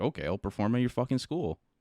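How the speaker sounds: plain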